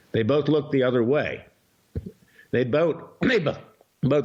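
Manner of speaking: choked-up, angry, stammering voice catching. Speaking out against the FBI and judges, choked up with anger. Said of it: "I'm getting choked up".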